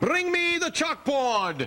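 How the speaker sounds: high, slow mock shout, bellowing.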